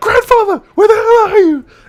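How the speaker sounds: very high, very loud, shrill full-blown scream. Retelling a character's outburst at her grandfather: imitating someone screaming. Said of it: "screaming off her head".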